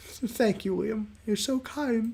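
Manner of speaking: close to crying. Thanking Liam after he offers to ask the owner about a swap: tearful. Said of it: "don't cry about it".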